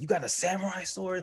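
very high, shrill, high-pitched shout. Retelling posing as if holding a samurai sword, re-enacting own yell. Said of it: "like yelling".

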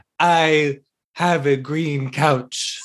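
very slow, drawn-out, stiff, stilted delivery. Quoting a person's words the way they said them, very slow and stilted. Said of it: "said very slowly and stiltedly".

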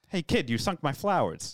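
put-on superhero voice with a boston accent. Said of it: "I added the kid".

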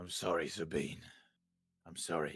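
holding himself together, regaining composure. Game master voicing a character apologizing to Sabine, steadying himself. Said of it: "he kind of stays himself a little bit".

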